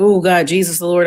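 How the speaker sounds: plain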